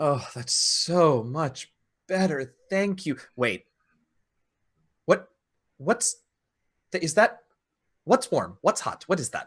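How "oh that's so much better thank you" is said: relieved, comforted sigh. A game master voices a ring as a player draws it closer to warmth: sighing with relief. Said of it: "you hear this this ring voice just sigh with relief".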